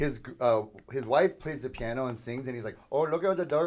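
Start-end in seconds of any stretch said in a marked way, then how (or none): 2.9-3.7 imitated Indian accent. Retelling what the Indian Dad says to his wife: imitating the Indian Dad's accent. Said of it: "and he has this accent".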